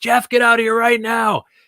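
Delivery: high, frantic scream. Retelling a night when the dad called from the backyard: imitating dad screaming. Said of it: "starts screaming at me".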